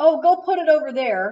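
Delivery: put-on high yell. Retelling how a worker answered about the luggage: imitating someone yelling. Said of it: "he just yells to me".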